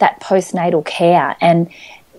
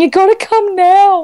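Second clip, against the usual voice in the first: put-on tearful pleading crying, higher and louder; 13 semitones higher, 5 dB louder than usual. Retelling phoning mum after coming home from hospital: imitating own past crying. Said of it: "on the phone in tears going".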